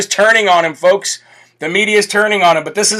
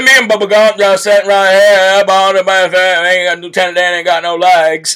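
put-on Southern drawl. Mocking a man's bad accent by imitating him: mocking Forrest Gump voice. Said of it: "That's exactly what he".

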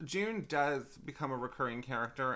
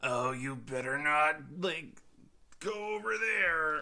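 put-on disgruntled surfer voice; 3 semitones higher, 4 dB louder than usual. Disputing with the other speaker how RedVegiemon sounded, the speaker does a disgruntled surf-shop employee voice. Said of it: "sounds like a disgruntled, like, surf shop employee".

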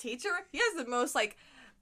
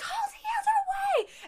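mock panicked, high, stretched, drawn-out shout. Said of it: "He was just panicking".

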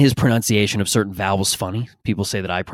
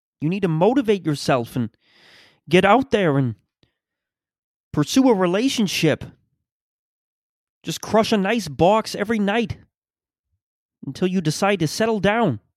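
high, pitched-up lecturing voice; 11 semitones higher than usual. Opening a show with an impression, Jordan Peterson impression. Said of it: "that's my Jordan Peterson impression".

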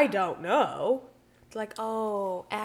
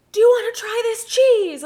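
very loud, shrill screamed voice; 14 semitones higher, 12 dB louder than usual. Retelling how a sample man offered cheese: imitating a scream. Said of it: "the guy literally screamed".

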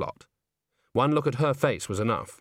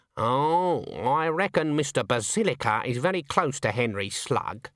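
plain reading voice

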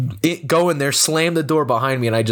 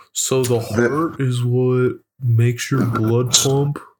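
dull, droning, flat, boring monotone. Mocking the most boring talker's lecture, imitating Mindy's monotone. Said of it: "monotone fucking Mindy being like".

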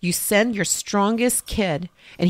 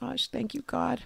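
mock weepy, higher voice, crying while talking; 5 semitones higher, 9 dB quieter than usual. Retelling holding a daughter in China and thanking God: imitating own crying. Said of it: "I'm, like, crying, I go".

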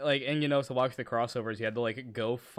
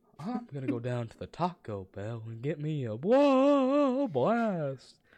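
swooping cartoon voice, "whoa" drawn out; 4 semitones higher, 4 dB louder than usual. Asked on a podcast for one real quick before the end, do a Hank Hill impression. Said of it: "My impression".

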